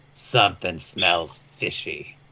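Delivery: gruff, growling voice dropped very low. Narrating the scene, Raimi looks to Tobiyashi and speaks: gruff man's voice. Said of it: "says in a gruff man's voice".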